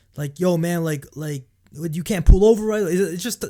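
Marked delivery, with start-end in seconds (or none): 0.4-2.9 loud, patronizing, condescending talking-down tone. Recounting being pulled over, imitating a man who approached him talking down. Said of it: "his tone of voice, just like talking down to me".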